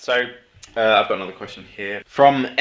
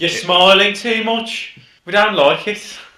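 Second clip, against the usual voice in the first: put-on high-pitched Midlands accent; 10 semitones higher, 4 dB louder than usual. Teasing the other speaker for smiling: put-on Midlands accent. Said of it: "I'll stop doing it".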